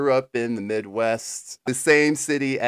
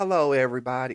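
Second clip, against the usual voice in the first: put-on genteel manner, mock refined politeness. Greeting the listeners to open the episode, put-on genteel manner. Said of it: "I will try to act very genteel".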